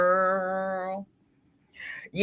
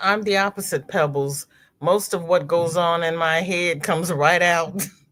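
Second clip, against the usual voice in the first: ordinary talk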